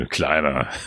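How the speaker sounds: talking-down, contemptuous, dismissive, belittling tone. Demonstrating the taunt aimed at Bruce Willis: dismissive 'Kleiner'. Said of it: "ich mag es so abfällig".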